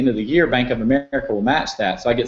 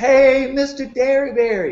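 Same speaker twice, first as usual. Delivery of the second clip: very high, hollered, screamed-out voice; 13 semitones higher than usual. Retelling a story, speaker acts out a man leaning back and retelling a scream. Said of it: "He screamed it out".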